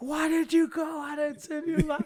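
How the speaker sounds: mock, very high-pitched coach-style yelling. Retelling what the dad, the third base coach, yelled: imitating dad yelling. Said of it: "He's yelling at me".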